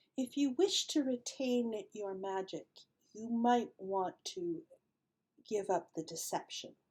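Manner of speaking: gentle, hushed voice. Running a game, voicing an unseen speaker warning a player's character, in a soft voice. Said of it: "you hear a soft voice that says".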